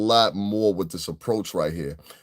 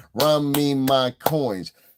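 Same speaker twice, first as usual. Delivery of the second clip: slow, put-on East New York Brooklyn accent; 4 semitones higher than usual. Repeating a woman's line: imitating a Brooklyn accent.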